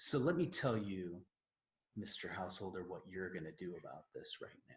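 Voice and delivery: acted, uber-calm, soft, patronizing tone. Imitating repairmen who talk down to customers: imitating condescending calm voice. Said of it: "uber calm in a really condescending way".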